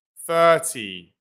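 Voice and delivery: thirty with stress on first syllable thir. Explaining number stress so listeners can tell thirty from thirteen, stress on "thir". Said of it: "it's in the first syllable".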